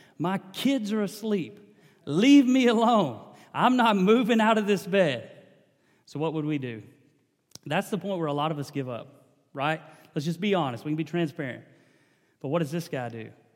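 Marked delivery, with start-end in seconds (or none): 0.2-5.3 shouting loud and slow. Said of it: "he shouts back and says".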